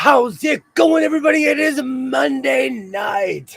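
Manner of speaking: croaky voice. Greeting everybody on a Monday night: croaky voice. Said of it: "If I sound a bit croaky".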